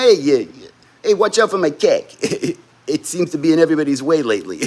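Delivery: put-on Boston accent, cock said as cack. Retelling how a man used to say cack, in a Boston accent. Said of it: "He'd have like a Boston accent when he did it".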